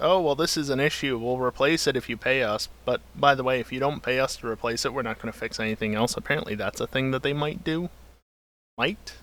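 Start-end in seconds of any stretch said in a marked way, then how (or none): none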